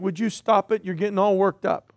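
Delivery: ordinary talk, nothing marked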